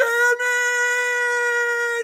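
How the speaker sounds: frustrated, shrill angry yell, very high, drawn out. Retelling shutting off a game, pissed, retelling an angry yell like Raphael. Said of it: "I shut that shit off and I yelled".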